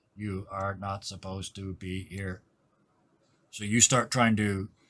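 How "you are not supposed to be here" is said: flat, mechanical, monotone robot voice. Voicing a machine that turns to a player: robot voice. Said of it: "It turns to you, and you hear".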